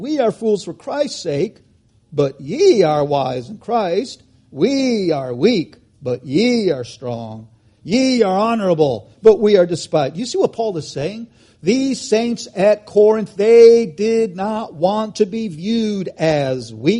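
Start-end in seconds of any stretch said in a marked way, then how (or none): 0.0-10.2 play-acted ironic, sarcastic delivery. A speaker quoting Paul's letter to the Corinthians, delivering it in mock-sarcastic tone. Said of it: "in sarcastic tone".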